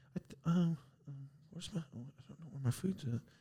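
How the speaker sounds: very quiet, muddled mumbling under the breath. Retelling an old lady waiting on her food: imitating someone mumbling. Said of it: "I hear her start mumbling".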